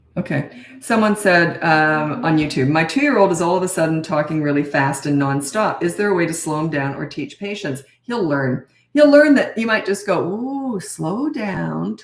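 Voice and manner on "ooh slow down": very slow, stretched-out, drawn-out words. Advising a parent how to answer a fast-talking toddler, very slow demonstration. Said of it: "talk like that".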